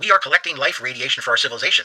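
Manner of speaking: normal talking voice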